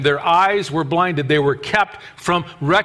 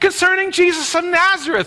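exasperated, irritated, stating-the-obvious tone, high-pitched; 13 semitones higher than usual. Acting out a disciple's reply about Jesus: acting out Cleopas's irritation. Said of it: "the irritation in Cleopas' face and voice".

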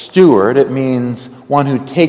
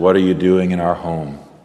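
put-on groggy, just-woken voice, low murmur; 6 semitones lower, 5 dB quieter than usual. Retelling a teenager woken in the living room, imitating a groggy teenager. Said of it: "groggily kind of opens one eye and says".

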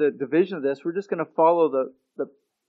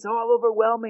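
plain

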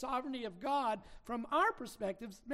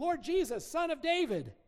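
mock desperate crying out, loud and high; 5 semitones higher, 5 dB louder than usual. Retelling a blind man by the road calling to Jesus: retelling a loud cry out. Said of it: "he begins to cry out".

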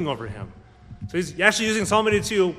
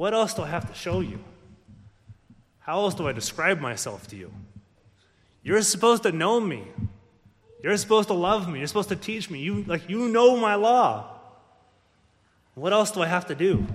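weary, fed-up exasperation. The speaker voices words to those who rejected him, acting out exasperation. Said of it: "You can hear the exasperation in Jesus' voice".

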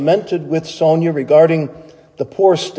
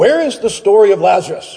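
abrupt and sudden, much higher pitch; 4 semitones higher than usual. He turns to Sonia with a question: sudden question. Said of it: "he asked suddenly".

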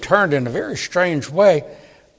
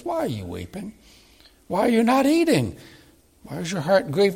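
tender, caring, gentle voice; 4 semitones higher, 5 dB quieter than usual. Acting out a man's questions to a weeping woman, retelling tender questions. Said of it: "but in a tender way".

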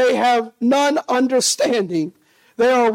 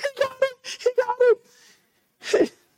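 mock very high, very slow, drawn-out tearful sobbing; 12 semitones higher, 4 dB quieter than usual. Retelling watching a rescue from up above: retelling own past crying. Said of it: "But I was up there crying".

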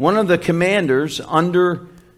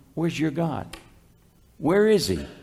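play-acted scornful, mocking, taunting jeer; 6 dB quieter than usual. Imitating unbelievers taunting a believer who cries out: imitating a mocking taunt. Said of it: "Almost in a mocking way".

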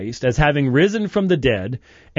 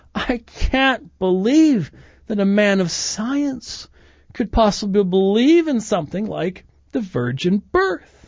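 derisive, scoffing, mocking, high drawn-out tone; 6 semitones higher than usual. Retelling what an atheist said during a dialogue, imitating someone's mocking tone. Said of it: "in a mocking tone".

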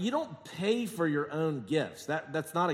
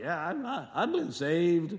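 imitated drunken slurring. Retelling a drunk man met in South Carolina, imitating his slurring. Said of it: "he's all slurring".

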